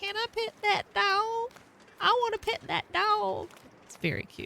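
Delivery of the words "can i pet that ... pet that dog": put-on very high southern child voice. Describing a funny video, the speaker imitates a southern little child asking. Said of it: "a very southern little child asking".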